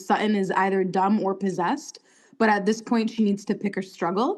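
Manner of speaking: normal talking voice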